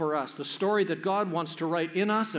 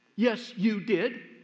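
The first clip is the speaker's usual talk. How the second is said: put-on huffy, very indignant, affronted child voice; 4 semitones higher than usual. Retelling the sister's retort to her brother: imitating an indignant child. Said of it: "very indignantly".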